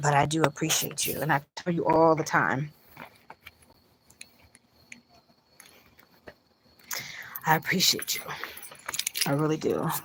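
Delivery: speaking while fighting off crying, holding back tears. Thanking supporters warmly while holding back tears. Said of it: "I'm trying not to cry".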